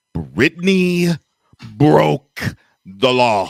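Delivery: drawn-out, deliberate speech. Spelling it out for someone who may not grasp it, said really slowly. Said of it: "I'm going to say it really slowly".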